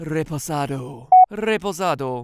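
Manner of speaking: attempted sexy voice. Signing off, the speaker tries saying one word in a sexy voice. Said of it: "I can't do it in a sexy voice".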